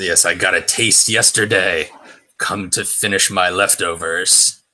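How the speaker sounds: voice of the devil. Voicing the devil, who looks right at the bunnies: devil voice. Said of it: "he looks right at you and says".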